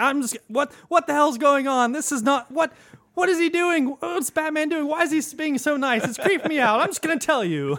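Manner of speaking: put-on very high, rattled-off, spooked, freaked-out babble. Retelling a Batman scene to a co-host, acting out a freaked-out character's panic. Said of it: "it freaks him out so much".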